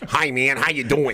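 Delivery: nasal voice, put-on. Speaker shows a voice comedians always do, Eddie Murphy's nasal voice bit. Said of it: "That's what, it's like it becomes nasally".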